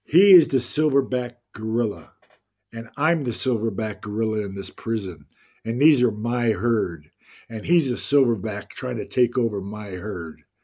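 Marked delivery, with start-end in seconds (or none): none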